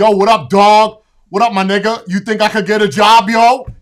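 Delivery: booming, very loud tough-guy street slang. Imitating a nephew asking for a job, mocking tough street talk.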